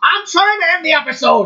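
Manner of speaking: shrill, high-pitched yelling. Trying to end the episode while another speaker keeps talking: yelling. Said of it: "Stop yelling!".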